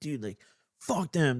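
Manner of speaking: acted-out angry, fed-up, pissed-off outburst. Retelling a friend's reaction after being robbed: imitating an angry friend. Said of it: "he's pissed".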